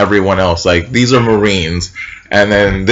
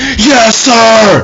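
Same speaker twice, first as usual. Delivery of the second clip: mock very high all-out shouting, "sir" drawn out; 13 semitones higher, 4 dB louder than usual. Told 'i can't hear you,' the speaker reenacts his own answer: retelling shouting louder than everyone. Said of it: "Louder than everyone".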